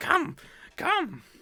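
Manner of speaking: slow, swooping, creaky, sing-song creature voice, drawn out. Player voicing a character rising from the fire to invite Cedric, hunched Gollum-like voice. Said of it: "kind of like Gollum".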